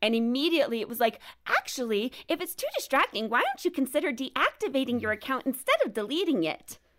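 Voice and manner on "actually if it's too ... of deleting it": annoying, pitched-up, sing-song automated computer voice. Retelling what the app said on deleting an account, as Instagram's annoying computer voice. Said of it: "as the annoying computer".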